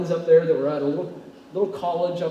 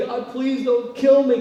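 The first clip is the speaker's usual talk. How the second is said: put-on high, tearful, sobbing, begging voice; 7 semitones higher, 5 dB louder than usual. Retelling own past prayer in a convenience store: retelling own tearful plea. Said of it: "I'm there crying uncontrollably".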